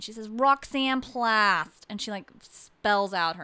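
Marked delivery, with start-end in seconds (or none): 0.3-1.9 put-on loud, heavy, strong New England accent. Retelling a woman giving her name when a man asks for it: Roxanne Plast's New England accent. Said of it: "this deep New England accent".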